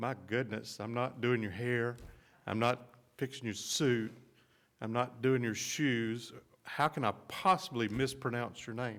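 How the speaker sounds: ordinary delivery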